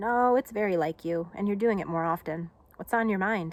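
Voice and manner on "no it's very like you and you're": ordinary delivery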